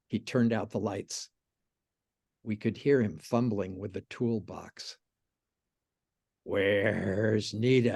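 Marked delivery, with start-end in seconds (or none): 6.4-7.9 spooky, scary, menacing voice. With the lights out, Buddy calls for Nita: scary voice. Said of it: "He said in a scary voice".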